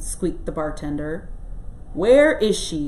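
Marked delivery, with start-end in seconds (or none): 1.9-2.9 loud, growling, demanding tone. Bill questions the bartender, growled. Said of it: "growled Bill".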